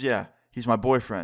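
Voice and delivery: ordinary talk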